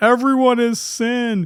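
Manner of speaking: put-on, very high shouted yell. Imagining a guy who runs outside into the street: imitating someone yelling. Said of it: "this guy runs out yelling".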